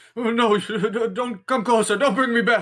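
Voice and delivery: shrill, very high, fearful and panicked, "don't" stretched out. Voicing a character backing away in panic as the players approach: panicked pleading. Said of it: "backing up in panic at your approach".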